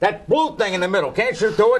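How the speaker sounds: high-pitched yell. Pressing the other speaker to explain it instead: yelling. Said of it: "sorry, I'm yelling at you".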